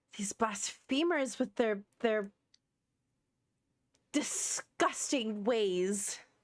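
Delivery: acted, furious, angry character voice. Playing a character furious about a blasphemous religious group: angry in character. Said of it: "You seem very upset".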